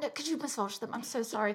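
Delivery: put-on cringing British voice. Imitating Tony cringing as he asks: imitating Tony, cringing and so British. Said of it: "he's cringing as he says it".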